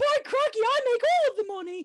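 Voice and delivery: put-on high-pitched old British woman voice. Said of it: "my old woman voice, but as a British woman".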